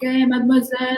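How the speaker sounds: mock street catcall, high pitched holler. Retelling how young men in a dark alley catcalled: imitating men yelling a catcall. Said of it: "they start yelling at us".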